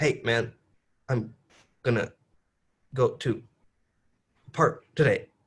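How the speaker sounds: choppy staccato delivery with halting breaks. Showing the contrast with the smooth version: choppy staccato delivery. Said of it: "But staccato would be".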